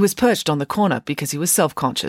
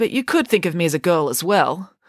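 usual speaking voice

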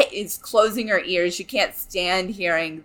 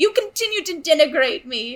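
put-on angry voice, higher; 10 semitones higher than usual. Retelling Gani getting mad at being called Gani: imitating Gani getting mad. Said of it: "keeps getting mad that they call her Gani".

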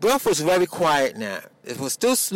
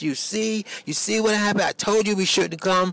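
put-on frantic screaming with blaming tone; 5 semitones higher than usual. Retelling a quarrel in a stuck car: imitating own screaming. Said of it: "I'm screaming at Morris".

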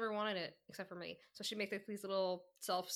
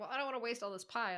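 usual speaking voice

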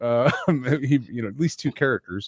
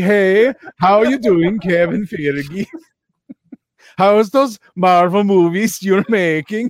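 silly, loud, high put-on Swedish-sounding accent; 7 semitones higher, 5 dB louder than usual. Greeting a man arriving on his boat, slipping into a Swedish Chef voice. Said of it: "I just turned into the Swedish chef".

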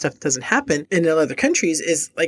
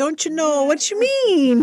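put-on Minnesota accent, very high-pitched; 11 semitones higher than usual. Talking about Norwegians, quoting how they talk in a Minnesota accent. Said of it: "You and your Minnesota accent".

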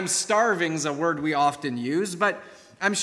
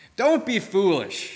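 exclaimed, exclamatory; 3 semitones higher than usual. Reading a story aloud, the neighbor answers his guest after dinner: exclaiming. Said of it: "exclaimed the neighbor".

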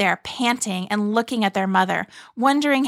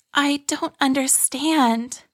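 mumbled, words barely shaped; 4 semitones higher than usual. Narrating a story, voicing Arlie's line: mumbled. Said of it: "Arlie mumbled".

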